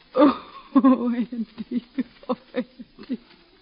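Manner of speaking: tearful voice. A mother who has just told her sick son his brother died, crying. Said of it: "Don't cry, Ma".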